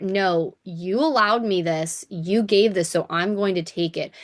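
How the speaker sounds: usual speaking voice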